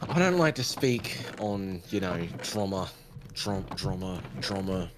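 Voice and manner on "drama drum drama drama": "drama" said different ways, lower and quieter. Practicing saying a word different ways, saying drama different ways. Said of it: "Just practicing my, trying to sound cool".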